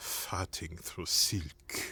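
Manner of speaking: put-on French accent. Describing the Matrix character to the others: Merovingian French accent. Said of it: "his French accent".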